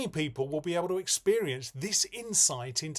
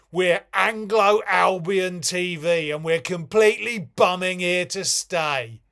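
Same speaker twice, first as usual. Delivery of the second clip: very loud, brash, booming put-on TV presenter delivery; 2 semitones higher, 10 dB louder than usual. A presenter of a new tv channel addresses viewers, in a mock tv presenter voice. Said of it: "Me, a man in a suit saying flaps! / Welcome to [name]".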